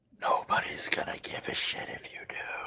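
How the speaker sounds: low, unvoiced whisper spoken aside.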